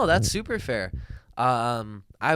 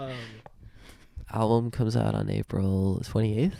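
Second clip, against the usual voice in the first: whispered speech. A guest gives the album release date to the host's audience, whispering. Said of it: "Why are you whispering like that?".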